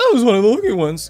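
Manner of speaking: voice cracking. A student tells listeners how finals went, voice cracking. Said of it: "why am I still voice cracking?".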